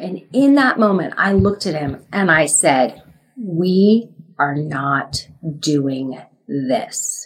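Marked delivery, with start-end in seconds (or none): 3.4-7.3 menacing low tone, drawn right out, very slow. Retelling what she told her husband in that moment, in a scary low voice. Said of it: "that scary kind of low voice".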